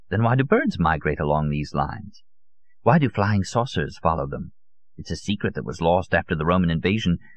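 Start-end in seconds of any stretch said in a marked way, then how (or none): none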